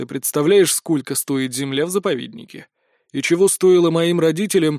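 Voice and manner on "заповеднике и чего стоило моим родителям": plain reading voice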